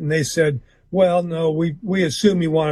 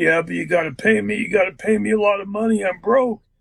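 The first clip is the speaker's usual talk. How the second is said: gruff way of talking; 4 semitones higher than usual. Retelling a phone call with Jimmy: imitating Jimmy's gruff voice. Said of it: "in his gruff voice".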